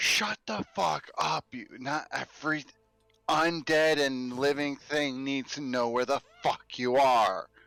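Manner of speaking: furious, angry scolding tone, kept urgent throughout. Voicing a character telling another to be quiet: hushed yelling. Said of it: "in that hushed yelling".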